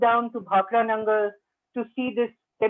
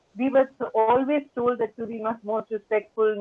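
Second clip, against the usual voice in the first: ordinary talk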